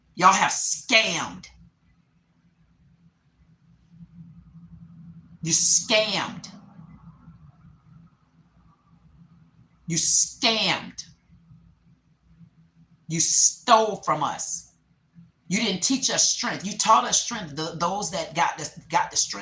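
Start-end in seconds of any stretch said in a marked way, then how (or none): 0.2-17.6 heated emotional rant, feelings spilling over. Addressing the people listening directly, emotional ranting. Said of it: "That's how emotional I am".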